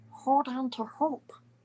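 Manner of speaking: put-on cartoon alien voice. Asked to say a line in a Stitch voice: Stitch voice. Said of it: "your Stitch voice saying, 'Hold on to hope'".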